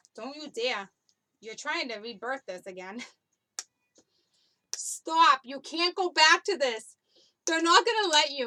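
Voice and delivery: loud talk broken up by giggling. Someone tells a listener fighting a toxic breakup not to go back, giggling while talking. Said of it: "I'm sorry I'm giggling".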